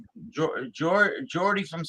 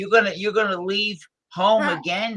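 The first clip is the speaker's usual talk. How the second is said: put-on irritating, nagging female voice; 3 semitones higher than usual. Acting out a jealous, insecure woman talking to Jeffy: put-on annoying female voice. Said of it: "I gotta put the annoying female voice".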